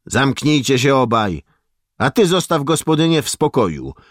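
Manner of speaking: sharp, cutting, very high-pitched voice. A doctor tells off two soldiers bothering the housewife, in a sharp voice. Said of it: "powiedział ostrym głosem lekarz".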